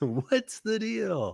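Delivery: very high-pitched stand-up comic delivery. Answering a request to ask a question as Jerry Seinfeld: Jerry Seinfeld impression. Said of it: "In your best Seinfeld impression".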